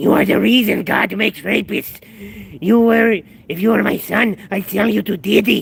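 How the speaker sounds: high, loud, creaky, rough voice. Hurling insults, the speaker slips into a Peter Lorre impression. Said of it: "I just slowly turn him to Peter Lorre".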